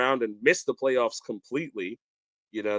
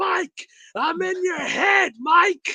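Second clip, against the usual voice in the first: mock taunting scream, very high and drawn out; 3 dB louder than usual. Retelling heckling a fielder who dropped the ball: imitating own past screaming. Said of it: "just screaming".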